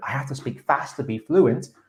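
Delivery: ordinary talk, nothing marked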